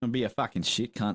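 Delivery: put-on fake Australian accent. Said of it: "I do a killer Australian accent".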